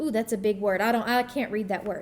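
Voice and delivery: ordinary talk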